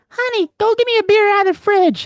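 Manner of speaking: very high, pitched-way-up furry puppet voice. Speaker demonstrates the Elmo impression he does, Elmo voice. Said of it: "my Elmo, I go".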